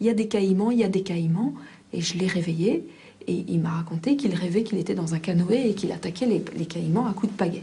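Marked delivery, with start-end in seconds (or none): none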